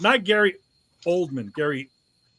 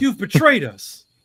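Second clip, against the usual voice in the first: put-on toy voice, higher and louder; 5 semitones higher, 6 dB louder than usual. Voicing toys that feel betrayed: voicing the Spider-Man toys. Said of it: "The Spider-Man toys are like".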